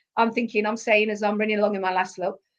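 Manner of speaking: normal talking voice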